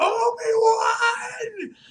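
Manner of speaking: mock full-throated scream, very high and very loud. Retelling a scene where Darth Vader screams a name: imitating Darth Vader screaming. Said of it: "Vader just screams".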